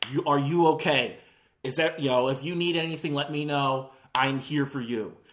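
low, earnest, matter-of-fact, super serious concern. Retelling a movie, imitating the vice principal comforting Simon: super serious, matter-of-fact. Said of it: "Super serious, ma-, matter-of-fact business".

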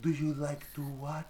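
vague, unplaceable put-on European accent. Retelling a movie scene, quoting a european woman on a website: imitating a european woman's accent. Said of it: "I can't place her accent whatsoever".

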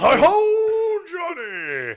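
high, booming announcer voice with drawn-out "ho". Explaining a joke by quoting Ed McMahon: Ed McMahon voice. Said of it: "He'd go".

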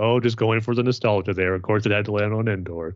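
ordinary talk, nothing marked

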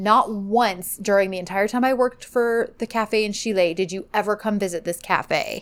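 ordinary delivery

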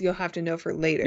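ordinary delivery

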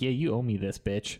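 put-on casual, offhand tone. Retelling how people took candy at the table: imitating someone nonchalant. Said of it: "the nonchalant".

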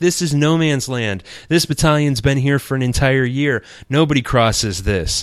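loud, stern shouting.

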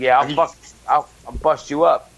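imposing, threatening tough-guy bruiser voice. Imitating Court, an imposing guy with a gut, as he threatens someone. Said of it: "He was like".

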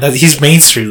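ordinary delivery

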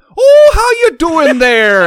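over-the-top fake Irish accent, very high and loud. Speaker retells how the man he introduced as a cousin spoke, fake Irish accent. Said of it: "he also tried to be your Irish friend".

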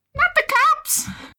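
put-on, very high-pitched, shrill yell. Voicing a fleeing barbarian character: yelling in character. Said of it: "she yells".

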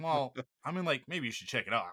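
put-on defeated tone. Retelling how James Marsden replied on the show: imitating James Marsden sounding defeated. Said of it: "just these sort of defeated".

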